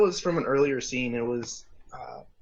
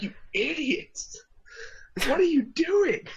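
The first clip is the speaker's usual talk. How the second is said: play-acted very high, exasperated, lost-it shriek; 13 semitones higher than usual. Recalling losing it while watching, retelling screaming at characters. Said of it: "I was just screaming at the characters like".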